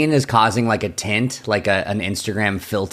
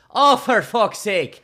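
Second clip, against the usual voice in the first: very high, slow put-on Irish brogue; 12 semitones higher than usual. Showing the phrase used to get into an accent: Irish accent. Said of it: "my phrase for Irish is".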